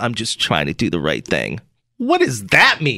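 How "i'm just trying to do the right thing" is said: very low, muttered, under-the-breath mumble. Retelling a man's phone call, imitating a mumble. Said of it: "And then he mumbled".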